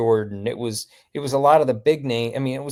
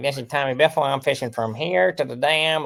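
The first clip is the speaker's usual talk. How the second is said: practised, rehearsed routine delivery; 2 semitones higher than usual. Retelling a voicemail routine done as an imitation: Tommy Biffle impression. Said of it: "I would do an imitation of Tommy Biffle".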